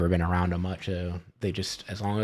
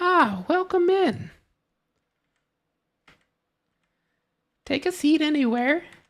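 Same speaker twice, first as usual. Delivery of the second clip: put-on very high, slow old crone voice. Acting out what a character says, in an old hag voice. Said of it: "it's another hag".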